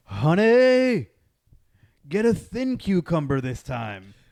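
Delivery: loud, high, far-carrying holler, "honey" drawn out. Retelling a comedian's joke, imitating a scream across a store. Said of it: "he screams across the grocery store".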